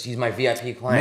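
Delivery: ordinary delivery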